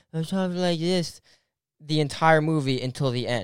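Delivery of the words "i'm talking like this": put-on childlike little-kid voice. Complaining about a movie character's voice to friends, imitating a childlike voice. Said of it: "she had the same child voice".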